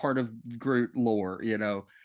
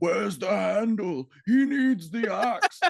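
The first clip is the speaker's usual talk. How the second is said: high, slow, pitched-up silly voice; 9 semitones higher, 4 dB louder than usual. Retelling a movie scene of a character asking for the handle: Peter Dinklage's character's silly voice. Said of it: "that silly voice that he's using".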